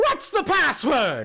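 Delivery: very high, swooping little imp voice. Voicing a little impish guard on a wall asking for the password: voicing a little impish guard. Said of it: "he looks down at you and says".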